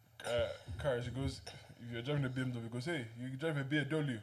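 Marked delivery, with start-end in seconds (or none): 2.9-4.2 put-on man's Mexican accent, higher and louder. Imitating how a guy pronounces car names: imitating a guy's Mexican accent. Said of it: "The way he pronounces".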